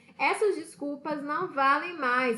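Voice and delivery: ordinary talk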